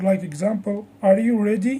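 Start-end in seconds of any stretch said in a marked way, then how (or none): 1.0-1.8 pitch rises at the end on ready. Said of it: "In questions, our voice usually goes up".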